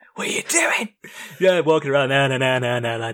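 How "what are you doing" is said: yell, much higher and faster. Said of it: "where he's shouting at the guy".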